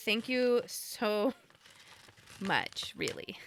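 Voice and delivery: sarcastic thank-you meaning the opposite. Thanking someone who redeemed a random bean, with sarcastic thanks. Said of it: "I say this with sarcasm".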